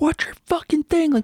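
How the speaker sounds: yelling, high-pitched. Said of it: "He's, like, yelling at the guy".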